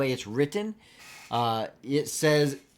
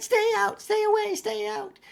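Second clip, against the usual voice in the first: tiny goblin voice, very high, rough and creaky. The game master voices a tiny goblin throwing jars of jam, tiny goblin voice. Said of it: "As a tiny little goblin up here".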